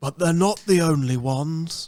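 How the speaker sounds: wildlife documentary narration style. On a podcast, showing how he says things, in a David Attenborough impression. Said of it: "That's my Attenborough".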